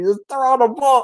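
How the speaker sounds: acted, shrill, exasperated shout pitched way up. Retelling yelling at the tv during a fantasy game: imitating yelling at the tv. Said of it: "I'm yelling at the T V".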